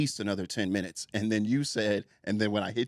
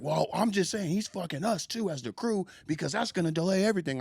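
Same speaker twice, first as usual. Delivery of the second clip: put-on high, screaming, yelled rant; 9 semitones higher than usual. Retelling what a crew member said while screaming at you: imitating someone screaming. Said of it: "I just don't understand why you're screaming at me".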